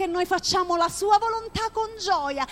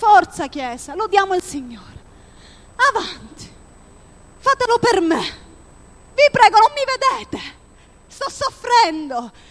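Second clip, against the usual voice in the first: worn-out, loud, put-on sighing voice; 6 dB louder than usual. Worship leader acts out what his soul says while leading praise, acting out sighing. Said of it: "perché a volte sospirando".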